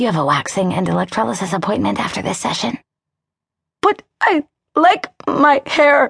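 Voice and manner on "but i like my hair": halting, stumbling, high, slow stammer. A woman answers a therapist's announcement, stammering. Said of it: "Janet stammered".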